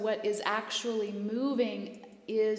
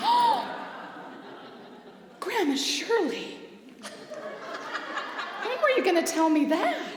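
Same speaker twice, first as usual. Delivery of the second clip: very high, loud, shrill astonished outburst with swooping pitch; 11 semitones higher, 6 dB louder than usual. Retelling own reaction to hearing about Grandma Shirley: mock shocked surprise. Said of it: "I'm like".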